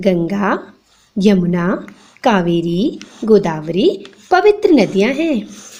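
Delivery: teacherly, slow, halting, pausing after each name. Teaching comma usage to a child, short pauses after each river name. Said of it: "देखा यहाँ पे मैं थोड़ा थोड़ा रुकी".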